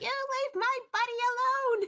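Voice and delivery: very high, shrill, high-pitched battle scream. A player voices Tika as she shoots arrows, Tika screaming. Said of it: "Tika just screams".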